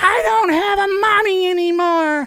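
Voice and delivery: very high, very loud, shrill full-lung scream. Speaker acts out a forty-nine-year-old woman screaming at her husband, imitating her screaming. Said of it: "screaming at her husband at the top of her lungs".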